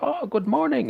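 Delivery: very high, excited chatter. A townsman greets people as he wanders off: talking excitedly. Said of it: "he's talking to some quite excitedly".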